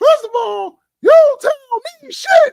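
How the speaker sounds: shrill, very high, loud put-on voice. Acting out how he used to respond to being told i told you so, imitating his high-pitched voice. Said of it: "He had a high pitched voice".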